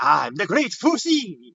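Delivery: put-on weird Italian accent. Describing an alligator character with a little hat, doing Fusi's weird Italian accent. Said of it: "This weird accent to him. Like I guess Italian".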